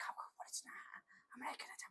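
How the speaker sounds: whispering. Explaining sound levels in decibels, demonstrating a whisper. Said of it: "এই যে ফিস ফিস করলাম আমি".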